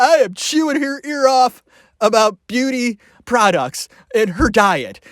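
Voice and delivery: talking through laughter. Imagining a family barbecue scene, laughing while talking. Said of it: "I can't talk 'cause I'm laughing".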